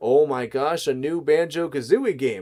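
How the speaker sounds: play-acted overjoyed, thrilled, giddy excited gush. Retelling getting a new game with friends: imitating someone's excitement. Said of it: "just like that level of excitement".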